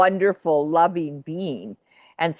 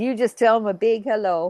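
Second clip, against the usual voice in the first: pitched-up put-on Texan accent; 5 semitones higher than usual. Retelling what a man said about the speaker's dad: put-on texan accent. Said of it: "he's talking in sort of a Texan accent".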